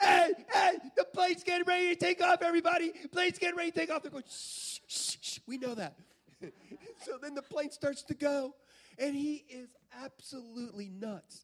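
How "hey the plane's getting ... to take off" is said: high-pitched, raised, loud yell. Retelling a passenger announcing takeoff to everybody on the plane, imitating a man yelling. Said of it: "he starts yelling".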